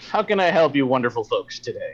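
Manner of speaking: jovial, cheerful, friendly shopkeeper voice. Voicing the friendly counter clerk greeting the players: jovial shopkeeper voice. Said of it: "he's very jovial".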